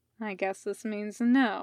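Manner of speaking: usual speaking voice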